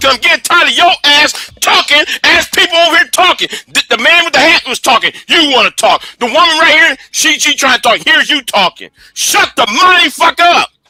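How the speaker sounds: furious, high-pitched angry shouting. Arguing with someone who keeps talking over others: angry shouting. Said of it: "The reason why I'm shouting".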